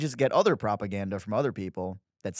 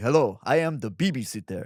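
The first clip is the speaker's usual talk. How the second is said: mock menacing politician voice. Retelling a campaign ad where Bibi arrives as babysitter: imitating Bibi as scary babysitter. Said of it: "He's like".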